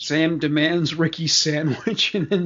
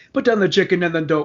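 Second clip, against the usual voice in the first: very fast, rushed, rattled-off delivery; 3 semitones higher than usual. Speaker quotes a character's line from a robbery scene; quoting Cyrus, really fast. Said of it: "like really fast".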